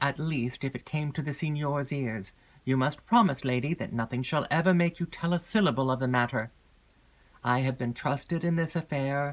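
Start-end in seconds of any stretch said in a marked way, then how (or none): none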